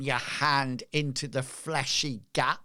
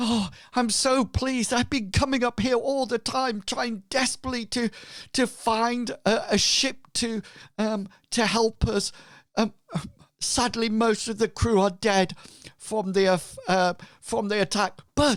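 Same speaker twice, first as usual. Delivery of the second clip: upset and anxious, higher pitch; 9 semitones higher, 4 dB louder than usual. Voicing a ragged, blood-stained survivor asking for healers: distressed. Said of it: "he seems to be, um, distressed".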